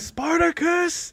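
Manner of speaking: play-acted, very high, movie-style shout. Retelling a movie scene with a shouted name: imitating a movie shout. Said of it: "and he's, like, shouting".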